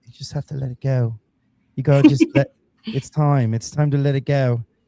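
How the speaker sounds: put-on British accent. Describing a woman who counsels property owners, imitating her British accent. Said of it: "she has a British accent and she's like".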